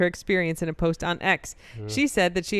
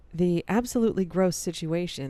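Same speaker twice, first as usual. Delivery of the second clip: put-on radio announcer voice, on-air broadcaster delivery; 4 dB quieter than usual. Trying out the Delta flight story in a radio announcer voice. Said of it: "Let me try it with radio voice".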